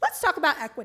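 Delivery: brisk classroom teacher voice. A speaker addresses the Edison Board of Ed, slipping into a teacher voice. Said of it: "I got my teacher voice on".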